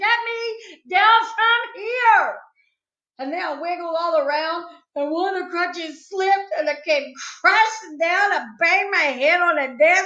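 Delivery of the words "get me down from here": high, slow, wailing crying voice. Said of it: "I shouted".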